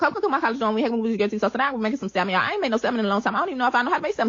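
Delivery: rapid-fire talking. Someone narrates cooking salmon in a college dorm, speaking very fast. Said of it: "You're speaking so fast".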